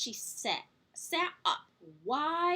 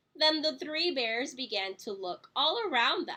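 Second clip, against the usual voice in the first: ordinary delivery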